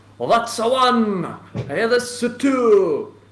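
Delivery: very loud, very high, booming Irish dockworker call. Retelling a dock scene, the speaker quotes a man catching fish in an Irish dock worker accent. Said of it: "An Irish dock worker".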